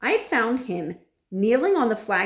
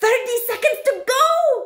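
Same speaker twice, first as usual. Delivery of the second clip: screeching witch shriek, very high and shrill; 6 dB louder than usual. The head witch, gripping a boy by the arm, screaming. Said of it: "screamed the Grand High Witch".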